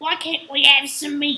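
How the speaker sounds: very loud orc voice. Retelling a scene where orcs want to eat the hobbits, in an orc voice. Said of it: "one of the orcs or goblins or whatever goes".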